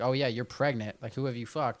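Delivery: normal talking voice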